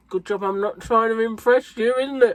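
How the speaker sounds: put-on talking with full mouth. Retelling what he said to a vegetarian while eating ribs, imitating talking with mouth full. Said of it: "With a mouthful of rib".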